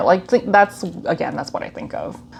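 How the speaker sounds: normal talking voice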